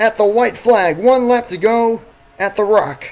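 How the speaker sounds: voice cracking and breaking mid-line. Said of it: "My voice just cracked there".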